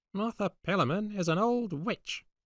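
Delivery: very high, shrill, cracked crone's shriek. Narrator reads a woman hobbling away through a farmyard, calling out: shrill, cracked voice. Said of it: "she shrilled out, in her cracked voice".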